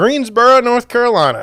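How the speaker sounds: put-on Southern US accent. Naming the next city while looking at houses, in a put-on southern accent. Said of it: "Now I did that accent there".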